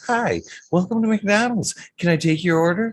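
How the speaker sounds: sugary, sweet voice, very high. Speaker retelling pulling up to a drive-thru, imitating a sweet drive-thru voice. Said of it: "a sweet voice that says".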